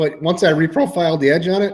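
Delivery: voice breaking, cracking on a word mid-phrase. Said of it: "my voice just cracked".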